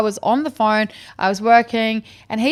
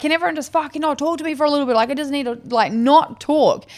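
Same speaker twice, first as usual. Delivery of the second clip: mock toned-down shouted outburst; 4 semitones higher than usual. Retelling being overwhelmed by everyone wanting attention: imitating herself screaming. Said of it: "I'm screaming".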